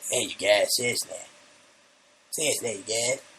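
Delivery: put-on cartoon kid character voice. Joking about a cartoon show, doing a Cartman impersonation. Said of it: "that's my Cartman impersonation".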